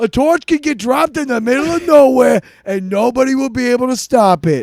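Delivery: loud tough-guy gangster voice. In a comedic role-play, one character confronts another, in an Ewok mobster voice. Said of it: "I thought you were an Ewok mobster".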